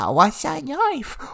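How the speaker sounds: put-on very high, drawn-out, sobbing baby talk. Voicing a baby-like turtle who sees a knife: crying turtle talking like a baby. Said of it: "Henry the Turtle starts crying".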